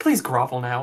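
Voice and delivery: hushed whisper. A woman whispers into a man's ear as he looks at her father; whispering. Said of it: "she whispers in his ears".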